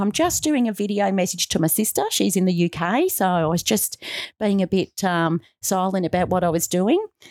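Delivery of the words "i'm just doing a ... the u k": usual speaking voice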